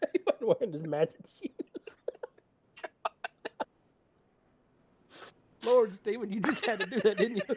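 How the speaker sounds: laughing while talking. Reacting to a funny moment while commenting, laughing to tears. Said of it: "I got tears coming out of my eyes".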